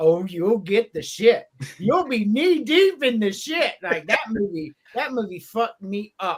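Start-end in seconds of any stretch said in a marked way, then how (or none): 0.0-3.7 put-on eerie, croaking creepy old man voice. Retelling a movie scene, quoting the funeral home man: imitating a creepy old man. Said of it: "this old creepy looking dude with gray hair".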